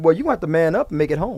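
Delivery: put-on sarcastic tone. Acting out what would be said to a husband: acting out a sarcastic remark. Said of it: "me, sarcastic, I'ma say".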